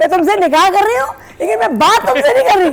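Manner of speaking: mock indignant rant, loud and high-pitched.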